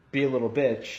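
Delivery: plain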